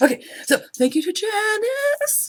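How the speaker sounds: very high voice, cracking and breaking up. A podcaster at eight in the morning, thanking listeners for donations: voice cracking. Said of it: "my voice is cracking".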